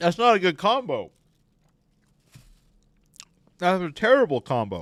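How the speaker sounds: talking while eating. Trying a banana with cheese, the speaker reacts, talking while eating. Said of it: "the sound of me eating a disgusting banana".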